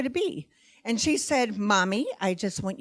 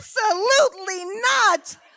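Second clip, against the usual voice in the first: loud, high, acted shout; 12 semitones higher, 6 dB louder than usual. Retelling own loud refusal: retelling own loud shout. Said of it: "people in Peoria probably heard me".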